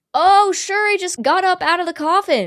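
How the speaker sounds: sarcastic, high, mocking disbelief. Recapping an episode, voicing Jed's reply to the kids, mock-sarcastic Jed voice. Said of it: "Jed says sarcastically".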